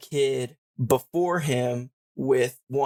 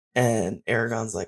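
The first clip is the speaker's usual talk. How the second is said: ordinary delivery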